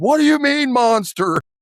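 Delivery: shrieking, very high panicked scream. Telling a friend about someone yelling monster on a cave boat ride, retelling someone screaming. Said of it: "just started screaming like".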